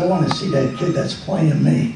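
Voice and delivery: ordinary talk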